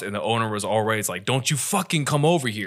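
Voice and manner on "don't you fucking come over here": imitated angry voice. Retelling the house owner warning off someone recording: imitating an angry owner. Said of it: "I get the anger in that person's voice".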